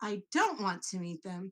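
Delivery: flat, firm delivery with "don't" stressed. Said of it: "I want to meet them?".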